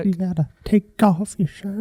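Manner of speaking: creepy, sinister whispering voice. Performing a bit for someone listening on headphones, creepy whisper. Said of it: "hearing you whisper in my ear".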